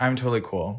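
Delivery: normal talking voice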